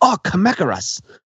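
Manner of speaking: put-on, high, exclamatory cry, dubbed-movie style. Quoting a dub line said when someone falls down a pit: imitating an exclamatory cry. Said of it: "rather exclamatorily in Godzilla's Revenge".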